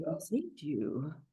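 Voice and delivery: soft, quiet voice, fully in character. In a joking argument, the speaker does a Charles impression. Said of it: "this is my version of Charles from Jason Takes Manhattan".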